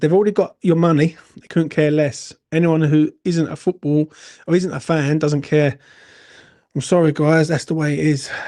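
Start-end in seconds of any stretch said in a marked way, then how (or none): none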